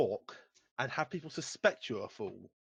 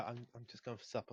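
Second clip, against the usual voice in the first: meek, very quiet, barely audible timid hush; 3 semitones lower, 13 dB quieter than usual. Showing how the missing player would say he went for supper: timid Simon impression. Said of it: "A bit more timid".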